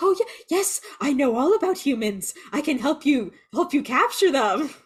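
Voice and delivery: groveling, desperate, high, pathetic begging. Speaker recounts a series scene where Baltar is spared by the supreme leader, imitating begging. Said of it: "he's like begging".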